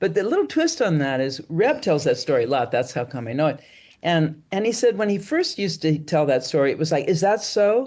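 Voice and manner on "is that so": raised, slightly defiant, challenging tone. Retelling how a teacher first said the line: imitating a challenging retort. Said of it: "kind of like a little bit of a b-, challenge back".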